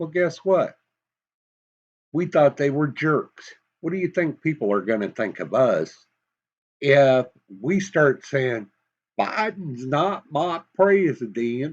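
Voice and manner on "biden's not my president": put-on slow, unhurried Southern accent. Speaker tries out a hypothetical protest line in a Southern accent. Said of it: "Probably shouldn't use a Southern tone".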